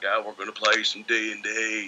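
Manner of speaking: put-on thick West Virginia drawl. Retelling a friend's plan to play D and D: imitating Dave Brown's West Virginia drawl. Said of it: "he spoke with a thick drawl from Brown County".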